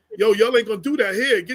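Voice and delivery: normal talking voice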